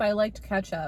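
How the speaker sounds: ordinary talk, nothing marked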